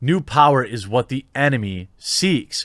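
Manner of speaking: usual speaking voice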